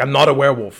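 loud, forceful, angry. Retelling a show scene where a character gets angry: imitating an angry retort. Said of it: "So then she gets angry".

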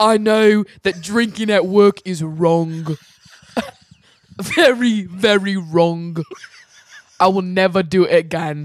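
imitation British accent. Retelling what a man said, the speaker uses a put-on british accent. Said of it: "You guys can imitate our accents".

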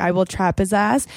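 ordinary delivery

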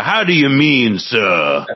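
slow, humble put-on simple country lawyer voice. Asking a follow-up question while playing a simple country lawyer. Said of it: "I'm just a simple country lawyer".

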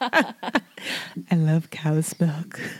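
very slow, drawn-out, sultry, sexy ASMR voice. Mocking a friend who just said she loves cow's milk: imitating Becky's sexy ASMR voice. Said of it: "She went into her A S M R voice".

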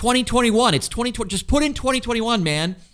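mock screaming. On a downtown Austin corner, the speaker retells yelling at a guy: retelling screaming at a guy. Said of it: "And I'm like screaming at this guy".

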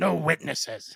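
very loud, rough, snarling, growling roar. Voicing a red-skinned creature chasing a boy: growling shout. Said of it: "One of the creatures growls at the boy and shouts".

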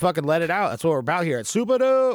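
high, loud, hyped-up cheering.

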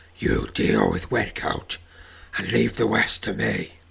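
gruff, rough, growling voice. Narrator reads Tarangar's line as he turns toward Zaramog: growling. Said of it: "he growls".

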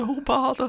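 southern drawl, pitched very high. Friends trying character voices, speaker attempts: Winnie the Pooh voice with southern drawl. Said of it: "You just had like a southern drawl".

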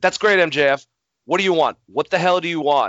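put-on agitated outburst. Retelling how someone reacted to a sarcastic apology, acting out an agitated outburst. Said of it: "hold on, Sammy, calm down".

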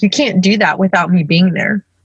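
ordinary talk, nothing marked

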